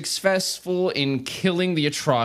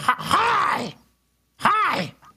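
shrill, much higher put-on crow voice, yelling. Acting out what the crow says when tied off, yelling hi in shrill crow voice. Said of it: "yelling hi in his shrill crow voice".

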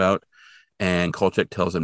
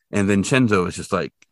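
normal talking voice

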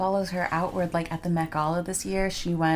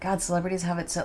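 ordinary talk, nothing marked

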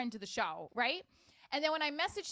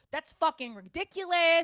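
loud, hot-tempered angry outburst; 3 semitones higher, 8 dB louder than usual. Retelling an argument, imitating own past angry outburst. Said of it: "me having the little temper that I do, I started getting like".

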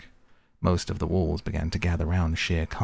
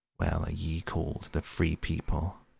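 ordinary delivery, nothing marked

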